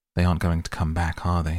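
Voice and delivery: plain reading voice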